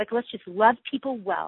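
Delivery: ordinary talk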